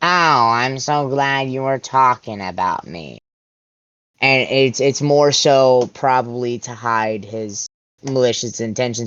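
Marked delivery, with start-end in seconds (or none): 0.0-3.2 put-on dry, sassy, bored sarcastic voice. Discussing a show, quoting a character's line in a mock-bored voice. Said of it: "with his normal bored voice".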